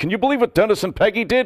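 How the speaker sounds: put-on indignant, incensed, high-pitched outrage. Retelling how Rodney called his friends: imitating Rodney's incensed phone call. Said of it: "he was incensed".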